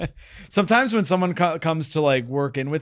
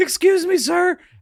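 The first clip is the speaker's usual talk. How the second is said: put-on anxious teen voice, pitched very high; 12 semitones higher, 4 dB louder than usual. Retelling what a gym teenager said: nervous teenager from The Simpsons voice. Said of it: "the teenager from, like, The Simpsons who's, like, really nervous".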